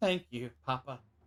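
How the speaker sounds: teary-eyed, tearful, grateful delivery. Voicing a scooped-up character thanking the one who cradles him: tearful thank-you. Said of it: "looks up at you with a tear in his eye and says".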